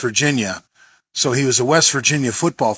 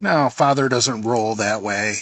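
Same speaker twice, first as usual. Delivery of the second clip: ordinary delivery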